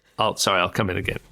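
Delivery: ordinary delivery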